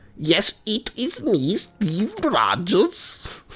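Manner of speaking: put-on odd German accent, very high and slow, drawled. Describing an evil comeback, the speaker voices Steve Rogers in a weird German accent. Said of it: "It's a really weird German accent".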